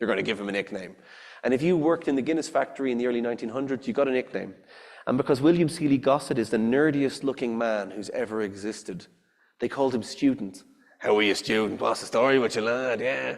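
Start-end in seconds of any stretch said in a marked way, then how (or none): 11.0-13.0 put-on Irish Dublin accent. Imitating Guinness factory workers greeting the man nicknamed Student, in a Dublin accent. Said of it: "that's a Dublin accent".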